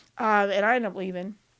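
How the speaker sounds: normal talking voice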